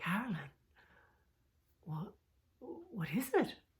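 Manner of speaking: soft, lovely, beautiful calling voice. Retelling what a man said at the gate, imitating his beautiful voice. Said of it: "in a beautiful voice".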